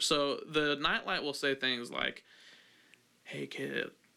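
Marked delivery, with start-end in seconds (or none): 3.2-3.9 sinister, creepy put-on talking-toy voice. Acting out a prank nightlight talking to a sleeping kid: put-on creepy nightlight voice. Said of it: "real creepy like that".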